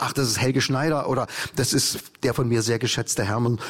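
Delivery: ordinary talk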